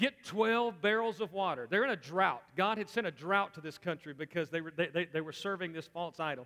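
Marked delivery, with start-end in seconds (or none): 0.0-1.7 dry, mocking, sarcastic delivery. Retelling a challenge given to the watching priests: retelling a sarcastic order. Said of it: "taking the sarcasm thing".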